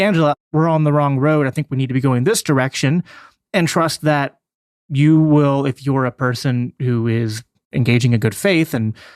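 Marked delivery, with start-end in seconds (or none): none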